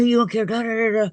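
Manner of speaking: mock high, shrill, yelled screaming rant. Retelling how a grocery delivery guy reacted: imitating someone screaming. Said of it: "he just starts screaming at me".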